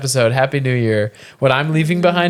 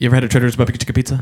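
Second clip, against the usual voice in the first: very fast rapid-fire delivery; 2 semitones lower than usual. Asked to do the line he always says, said really fast. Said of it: "the thing that you always say really fast".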